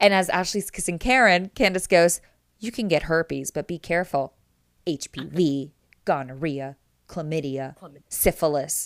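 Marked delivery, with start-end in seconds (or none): 2.6-8.9 put-on muttering, much lower pitch, slower pace. Recounting Candace commenting as one woman kisses another, imitating Candace under her breath. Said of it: "Candace under her breath goes".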